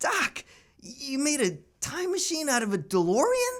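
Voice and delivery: very high, very slow, loud, drawn-out, amazed. Doing a Michael J. Fox impression on a challenge: Michael J. Fox impression. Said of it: "Michael J. Fox impression".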